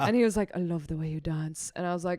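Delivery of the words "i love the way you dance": put-on whispered British accent, quieter. Comedian retelling a man's compliment whispered in her ear, imitating a whispered British accent. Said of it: "He had a British accent too".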